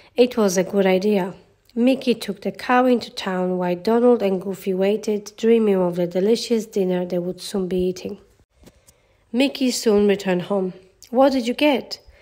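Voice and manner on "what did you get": keen, expectant, excited and eager tone. Narrating a story, voicing two characters questioning a third, asked excitedly. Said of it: "the two asked excitedly".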